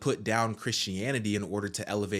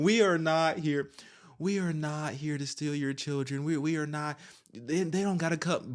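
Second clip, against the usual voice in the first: play-acted scornful, derisive voice, pitched up; 6 semitones higher than usual. Repeating another speaker's claim back at them, the speaker does a mocking imitation. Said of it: "I don't trust you".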